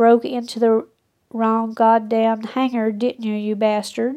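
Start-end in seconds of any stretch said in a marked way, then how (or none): none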